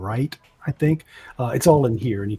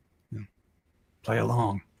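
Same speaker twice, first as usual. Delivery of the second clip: soft, hushed half-whisper; 6 dB quieter than usual. Voicing a character who quietly tells the others to go along: half-whispering. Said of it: "And then he whispers".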